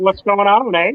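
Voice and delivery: put-on Southern Canadian accent. Joining a joke about accents, in a put-on southern canadian accent. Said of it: "it's the Southern Canadian".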